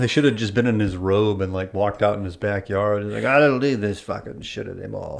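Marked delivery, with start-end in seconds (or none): 3.2-5.2 gravelly, creaking movie-star voice. Picturing him walking out into his backyard in his robe: Johnny Depp impersonation. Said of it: "is that your Johnny Depp impersonation?".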